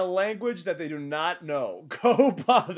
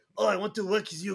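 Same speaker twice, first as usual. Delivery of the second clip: put-on French Canadian accent, much higher pitched; 2 semitones higher than usual. Retelling what Speedball said, imitating Speedball's French Canadian accent. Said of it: "in his cute French Canadian accent's like".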